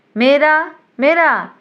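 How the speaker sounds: put-on scolding voice. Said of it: "মিস সরকারের গলা নকল করে ধমক দিয়ে উঠল".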